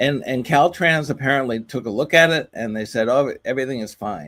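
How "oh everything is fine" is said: ordinary talk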